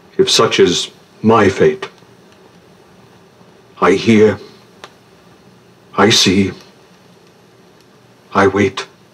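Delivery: composed, even, calm tone. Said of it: "The Malay rose suddenly and went in. / he cried suddenly. / was speaking in a low and dreamy tone. / "For where can we lay down the heaviness of our trouble, but in a friend's heart?".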